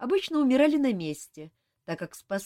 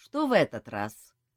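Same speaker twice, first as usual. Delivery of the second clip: slow, as stern as possible; 4 semitones lower than usual. A man questions his half-brother, who has just appeared, as stern as possible. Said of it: "Со всей возможной строгостью спросил он".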